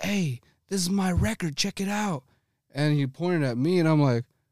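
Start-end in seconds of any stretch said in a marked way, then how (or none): 0.0-2.2 mock bellowing, high and full-lunged. Retelling how another dj pointed him out: imitating someone yelling at top of lungs. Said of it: "yells, bro, at the top of his lungs".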